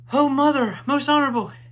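gasping, out of breath, very high, very loud cry. A little boy, after a deep breath, calls to his mother: panting. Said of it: "he panted".

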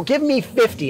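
ordinary talk

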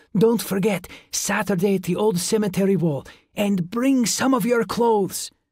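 insistent. The little vampire adds one more thing to the boy, insistent. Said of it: "and added insistently".

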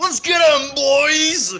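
shouted battle cry. Narrating an ambush, voicing a character as he comes out: shouting a battle cry. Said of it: "he just shouts out".

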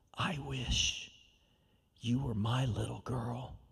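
hushed, secretive stage whisper, half-whispered. Quoting what the teacher said to the speaker, retelling a half-whisper. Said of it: "she whispered".

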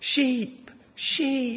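put-on high, excited, eager child call.

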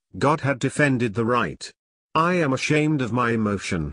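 plain

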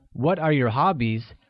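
ordinary talk, nothing marked

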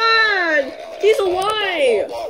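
loud screaming. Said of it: "he's screaming a little too loud".

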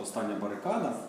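ordinary delivery

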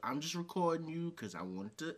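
mock needling, passive-aggressive tone. Imitating another speaker's words: mock passive aggressive tone. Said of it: "That passive aggressive".

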